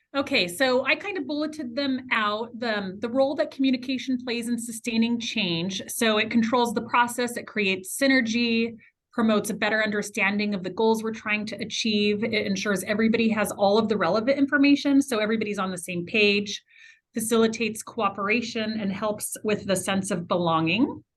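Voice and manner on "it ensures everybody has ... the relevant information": fast, rattled-off delivery. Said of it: "'cause I'm talking fast".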